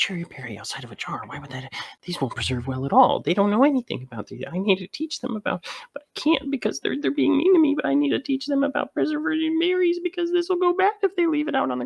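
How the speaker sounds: rambling mumble to oneself, very high. Narrating to the listeners, voicing Spinnerack: mumbling to himself. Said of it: "You hear Spinnerack kind of mumbling to himself".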